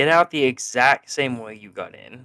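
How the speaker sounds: usual speaking voice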